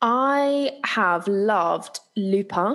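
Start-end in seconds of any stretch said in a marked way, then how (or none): 2.2-2.8 'lupin' pronounced with French accent. Recommending a Netflix series in conversation, naming it: French accent on 'Lupin'. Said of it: "I'm going to say it with a French accent".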